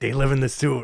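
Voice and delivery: bad put-on Brooklyn accent. Doing a terrible Dave Meltzer impression about the Morlocks. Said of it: "I have a terrible Dave Meltzer impression".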